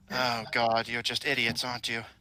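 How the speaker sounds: somber, rough but pleasant character voice. Voicing a woman character questioning the others, in a somber, rough but pleasant voice. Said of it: "somber, rough but pleasant sounding voice".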